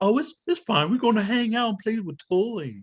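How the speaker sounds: high, slow, creepy coaxing uncle voice.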